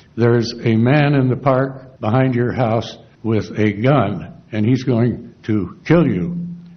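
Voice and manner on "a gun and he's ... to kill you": ordinary talk, nothing marked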